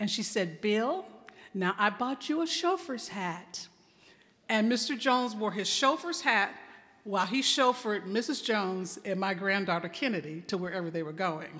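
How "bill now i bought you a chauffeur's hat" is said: quiet, soft-spoken woman's voice. Retelling what Missus Jones told Bill about his hat: Missus Jones's soft voice. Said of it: "just a soft voice".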